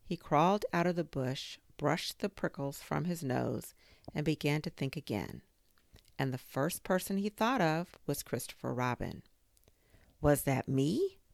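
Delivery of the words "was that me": awed, wonder-struck, small disbelieving voice. Narrator reads Christopher Robin's question, awed voice. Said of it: "in an awed voice".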